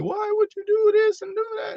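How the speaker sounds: put-on very high, sobbing, tearful girl's voice. Retelling how girls cried to him: imitating a girl crying. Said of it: "girls be crying to me".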